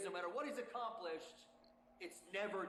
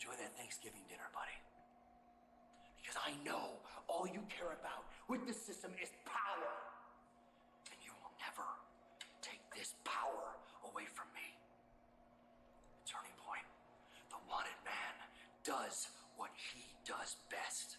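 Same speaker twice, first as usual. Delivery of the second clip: speaking in a whisper, lower and quieter; 6 semitones lower, 5 dB quieter than usual. Delivering a promo, taunting a rival: whispering. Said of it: "Why is he whispering?".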